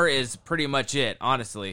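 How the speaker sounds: ordinary talk, nothing marked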